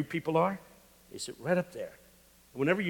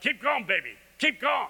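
high, encouraging, cheering yell; 8 semitones higher than usual. Describing how the men in the speaker's church react, imitating them yelling. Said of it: "They start yelling".

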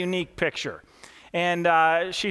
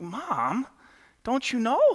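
put-on very slow, crestfallen, dejected little girl voice, drawn out; 4 semitones higher than usual. Retelling a joke, quoting the little girl to her mom again: imitating a dejected little girl. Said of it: "the little girl was kinda dejected".

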